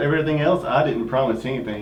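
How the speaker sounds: ordinary delivery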